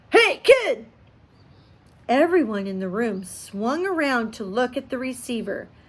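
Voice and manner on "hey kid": slow, strange, wheedling coaxing tone. A narrator reads an unknown voice over a phone receiver: strange coaxing tone. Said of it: "It had a strange coaxing tone".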